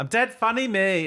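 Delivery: put-on full-on Liverpool Scouse accent, pitched high. Speaker mocking liverpool people, mock scouse accent. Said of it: "every frigging Scouser thinks they're a comedian".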